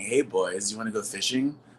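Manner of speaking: put-on creepy old man voice. Speaker jokes about being an old guy on Snapchat: creepy old guy voice. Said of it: "I'll be the like creepy old guy who's saying".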